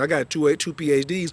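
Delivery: normal talking voice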